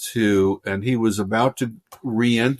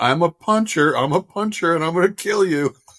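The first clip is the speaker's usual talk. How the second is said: yelling at a raised pitch; 7 semitones higher than usual. Retelling an actor chasing him in an alley: imitating someone yelling. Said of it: "he started yelling something like".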